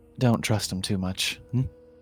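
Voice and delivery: whispering. Playing a character who whispers a warning to Aranwe: whisper in character. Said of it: "whisper to Aranwe".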